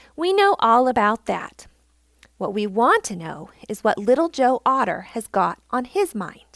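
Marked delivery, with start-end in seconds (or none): none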